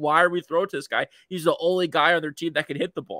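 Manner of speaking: plain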